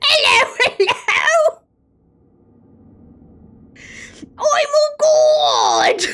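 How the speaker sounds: high-pitched, villainous, evil toad voice. Voicing a character's greeting in an evil toad voice. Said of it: "It's like evil toad".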